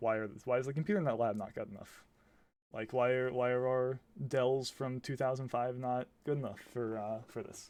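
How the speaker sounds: plain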